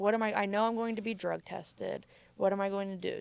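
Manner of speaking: plain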